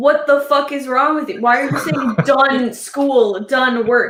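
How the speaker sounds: put-on heated, fed-up, flipped-out angry outburst. Retelling someone reacting to a phrase: imitating Marshall flipping out. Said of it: "flipped at me".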